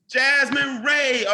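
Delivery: loud, drawn-out hype call.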